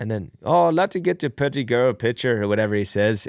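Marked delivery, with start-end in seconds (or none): 0.4-2.4 clumsy, botched, put-on Irish accent. Retelling what an old man in Ireland said: bad Irish accent. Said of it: "my Irish sucks".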